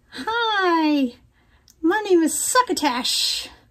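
very slow, drawn-out, stretched "hi". Introducing a work friend to everyone: Succotash voice. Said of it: "this is my work friend Succotash".

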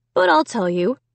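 plain reading voice

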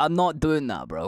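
put-on curt, bitten-off, short-tempered delivery. Retelling own replies to a stranger following along, short-tempered.

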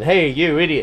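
usual speaking voice

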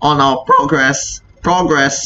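voice cracking, breaking up high. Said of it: "my voice just shifted, wheezed".

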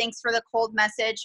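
plain

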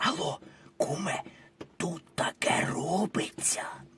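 hushed, breathy whisper. In a comedy sketch, phoning a friend from a train, whispering. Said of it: "що це ви пошепки говорите?".

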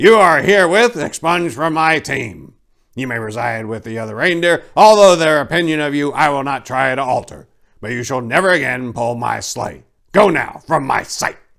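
stern, commanding proclamation shout, loud and high. Addressing a reindeer before the waiting team, shouted in a commanding voice.

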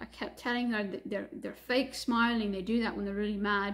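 ordinary talk

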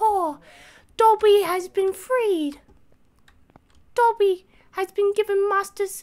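shrill, very loud, high-pitched shriek. Performing a requested impression for friends in a game: Dobby impression. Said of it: "Do a Dobby impression".

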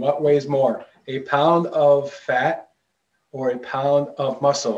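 slow, deliberate, each word laid out carefully. Debunking an internet question for viewers; saying it slow. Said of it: "I'm saying it slow".

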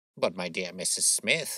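ordinary delivery, nothing marked

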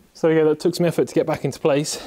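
winded, breathless. After forcing a clip back into position, the speaker talks out of breath. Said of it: "as you can tell by my out of breathness".

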